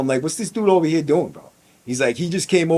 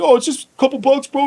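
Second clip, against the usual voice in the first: mock almost-crying voice, pitched way up; 10 semitones higher than usual. Speaker retells a kid backing down in their cell, imitating a kid near tears. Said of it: "this kid starts like almost crying".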